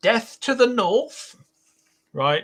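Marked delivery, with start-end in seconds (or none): 0.0-1.4 very high, pointed, declaring tone. Announcing a new name for herself, the speaker launches into a Margaret Thatcher impression. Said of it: "Here's my Margaret Thatcher".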